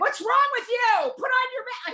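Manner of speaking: shrill, very high shrieking screech. Retelling yelling out the window at someone without a mask: retelling own screaming. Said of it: "I'm just screaming".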